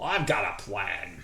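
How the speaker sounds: put-on low, slow, unhurried Australian accent. Speaker voicing a hero response line, Crocodile Dundee accent. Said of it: "I sound like Crocodile Dundee here".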